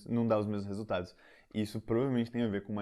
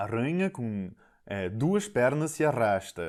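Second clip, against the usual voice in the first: slow, joking put-on European Portuguese accent; 3 semitones higher, 6 dB louder than usual. Retelling how a father tells a spider joke: imitating a portuguese accent. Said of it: "ele faz um sotaque".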